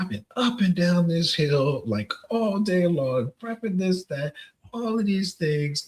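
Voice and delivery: furious, angry, high-pitched yelling rant. Retelling going off about a superior two ranks higher, reenacting an angry yell. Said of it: "I've been and I'm yelling".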